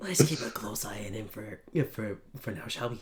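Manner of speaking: very quiet, low, hushed whisper. A character turns to Spur to suggest watching someone, whispering. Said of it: "turn and whisper to Spur".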